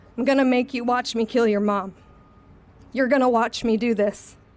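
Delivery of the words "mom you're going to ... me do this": ordinary talk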